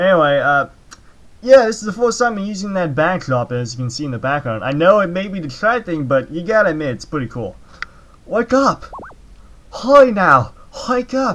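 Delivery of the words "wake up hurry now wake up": put-on Japanese accent, higher and slower. Speaker voicing a game's lines while playing it: put-on Japanese accent. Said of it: "my Japanese accent is kind of offensive".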